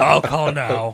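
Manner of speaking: mild, high, small shouted yell, cartoonish. Quoting a commercial line back and forth with the others: screaming in Joe from Family Guy voice.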